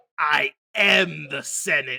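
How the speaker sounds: very loud, very slow, booming, drawn out word by word. Quoting a favorite villain line to friends: Palpatine impression. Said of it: "But when he's talking to Windu's".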